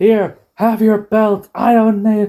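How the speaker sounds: high, slow, tempered, heated outburst.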